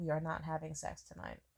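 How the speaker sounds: stone-cold, dead-serious, firm delivery. Retelling own past refusal to him: imitating own dead-serious tone. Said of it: "I was so dead ass serious".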